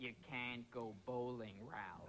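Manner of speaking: very low-pitched, slow voice. Doing a comedy impression bit: Jack Nicholson as Alice. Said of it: "Jack Nicholson as Alice".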